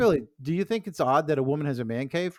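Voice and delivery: ordinary talk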